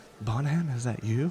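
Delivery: in a playful way. A narrator voices someone calling out to bonham, playful. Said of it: "in a kind of a playful way".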